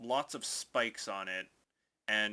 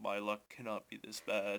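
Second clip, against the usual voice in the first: muttering under breath; 3 dB quieter than usual. Game master voicing a limping man dropping to one knee, muttering to himself. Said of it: "kind of mutters to himself".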